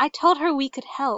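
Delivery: ordinary delivery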